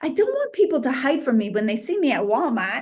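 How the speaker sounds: fast, put-on New England accent. Speaker repeats their previous sentence, now saying it in a New England accent. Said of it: "I'll say it in the New England accent".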